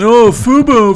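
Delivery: loud, high-pitched bullfighter-style call. On a sports radio show, the speaker does a bullfighter impression. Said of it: "That's my bullfighter impression".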